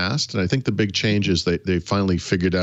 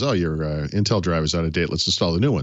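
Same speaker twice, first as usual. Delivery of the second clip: normal talking voice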